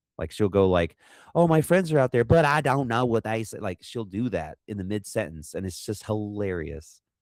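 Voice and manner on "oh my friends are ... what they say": imitated thick, heavy Southern Kentucky accent, pitched up. Describing a woman who switches voices mid-sentence: thick Southern Kentucky-fried voice. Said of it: "a very Southern Kentucky fried voice".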